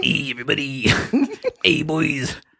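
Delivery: swooping, sleazy morning radio DJ voice. Doing a morning radio DJ bit for the others, in a sleazy Casey Kasem voice. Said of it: "turned into a sleazeball".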